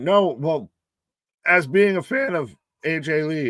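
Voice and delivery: voice breaking mid-phrase. Admitting to being an AJ Lee fan, with a voice cracking. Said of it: "as my voice cracked there".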